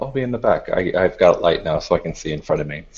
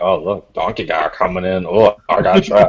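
slow, drawled running commentary muttered to himself. Voicing a character grumbling as others enter: muttering under his breath. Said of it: "Literally under his breath the whole time".

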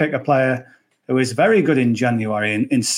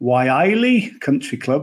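put-on Newcastle Geordie accent. Previewing a golf event, saying the course name: geordie accent. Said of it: "I would say that in a Geordie accent".

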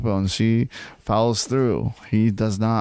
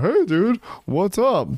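mock scream, much higher; 9 semitones higher than usual. Mocking a guy who greets Katie across the bar, retelling his scream. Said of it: "why even scream from across the bar".

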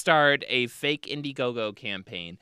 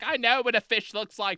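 mock angry male voice, higher pitch; 9 semitones higher than usual. Retelling a witness's reply to a newspaper: imitating an angry man. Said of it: "he got so mad".

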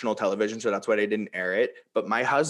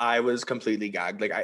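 plain

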